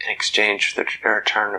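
plain

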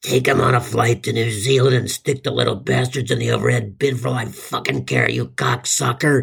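creaky, rough, raspy possessed-demon voice. Speaker retells what she said to him, in a raspy Exorcist voice. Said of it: "in that raspy exorcist voice again said".

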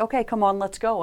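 put-on calm gentle voice. Retelling leading a horse along a path: imitating a very calm, gentle voice. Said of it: "very calmly, very gently".

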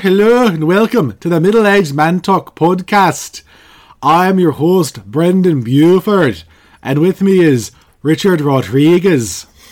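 very bad, loud, fake Scottish accent. Podcast host opening the episode, in the worst Scottish accent ever. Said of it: "That's like the worst Scottish accent ever".

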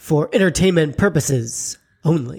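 dark, portentous, ominous, foreboding voice. A podcast host reads the show's closing disclaimer in an ominous voice. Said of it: "That ominous voice was [name]".

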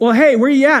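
loud, high yell called out from a distance. Telling a biking story, quoting friends calling back from ahead: retelling friends yelling back. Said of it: "And they yell back".

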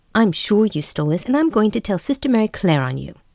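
high, mocking, goading, taunting jeer. Sonia taunts Elizabeth while inching toward the hallway, taunting. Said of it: "continued to taunt Elizabeth".

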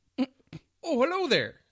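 shrill, very high, booming guard voice. Retelling a game session, voicing the first NPC guard at the gate: guard NPC voice. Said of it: "sounded a little like this".

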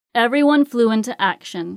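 plain reading voice

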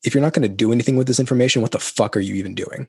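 aggressive, hard-driving, masculine berating voice. Acting out a harsh inner voice that pushes to act: imitating an aggressive inner voice. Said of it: "almost aggressive voice inside of me that goes".

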